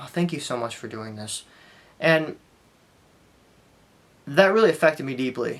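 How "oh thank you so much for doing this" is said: charity-tone delivery. Retelling what a nurse said, imitating thanks for a charitable act. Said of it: "I'll just tell you how she said it".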